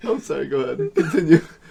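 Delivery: talking through laughter. Apologizing for interrupting another speaker, laughing while talking. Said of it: "I made myself laugh".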